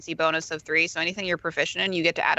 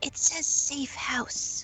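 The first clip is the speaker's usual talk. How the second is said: faint, very quiet, slow, drawn-out whisper; 9 semitones higher than usual. Whispering to the party what the sigil on the wall says: whispering very quietly. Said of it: "going to whisper very quiet, very quietly whisper".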